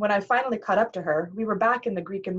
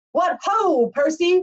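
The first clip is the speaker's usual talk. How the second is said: loud, high-pitched yell; 10 semitones higher, 6 dB louder than usual. A man in a wheelchair calls out from the gallery doorway: shouting. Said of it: "he shouted".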